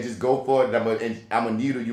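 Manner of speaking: normal talking voice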